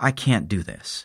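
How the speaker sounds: said softly and solemnly, quiet. A woman declines a gift from the narrator, quietly. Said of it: "she says quietly".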